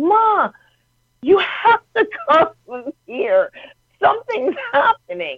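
play-acted shrill, very high top-of-the-lungs yell. Retelling how a woman's daughter screamed for her mother, imitating someone yelling. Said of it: "starts yelling at the top of her lungs".

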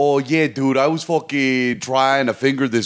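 put-on Baltimore man voice. Describing a guy the speaker knows, imitating a Baltimore guy. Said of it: "my Baltimore guy's like".

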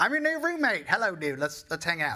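put-on Louisiana accent. Telling how Vic showed up at the old apartment, the speaker quotes him in Vic's funny Louisiana accent. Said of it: "he had a really funny Louisiana accent".

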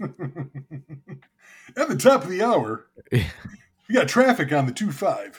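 on-air radio DJ announcer voice. Asked for his radio voice, he demonstrates it: radio announcer voice. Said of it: "Your radio voice".

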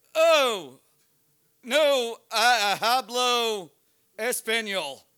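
loud, feigned clueless, play-dumb delivery. Retelling facing an angry man with a gun, retelling playing dumb. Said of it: "I was going to play dumb".

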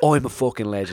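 put-on Cockney accent, man's voice. Retelling a video of a man rowing with security guards: imitating a Cockney man. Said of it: "kinda like a Cockney geezer".

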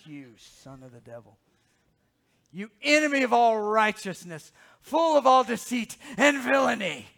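very loud, booming, swooping, theatrical delivery. Reading the passage aloud, the speaker gives the words to Elymas in a dramatic voice. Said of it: "you can't just read this in a normal voice".

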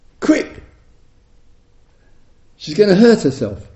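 acted, sudden, high, loud shout. Recalling their little daughter nearly rolling off the sofa: retelling a shout. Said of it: "And I shouted out".

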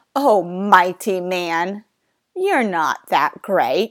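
ironic, belittling, sarcastic mocking tone. Showing how the verse should be read: sarcastic tone. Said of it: "read this verse with a sarcastic tone".

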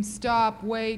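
plain

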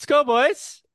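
very high voice with a Canadian lilt. Explaining what to yell near the goal, speaker demonstrates a canadian accent. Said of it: "develop a Canadian accent".

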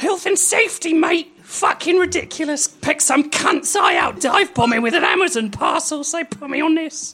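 very high-pitched cartoon crow character voice. Reading a story aloud, giving the crow's reply in Postman Crow voice. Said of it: "How quickly did you regret doing that voice".

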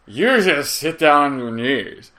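put-on slow, drawn-out, drunken showman voice. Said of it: "like a drunk [name]".

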